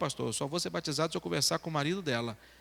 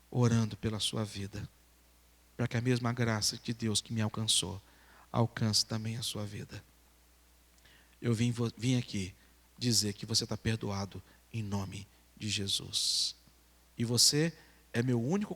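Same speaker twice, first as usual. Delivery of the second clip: mock words pushed out through tears, crying; 6 semitones lower than usual. Retelling a man's words of forgiveness to a neighbour: imitating someone crying. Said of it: "chegou pra aquele homem chorando e disse".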